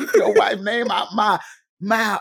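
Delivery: play-acted, hard-stressed, forceful words, very high. Retelling a shocking moment, imitating Will Smith's emphatic delivery. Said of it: "you put emphasis on, on the words".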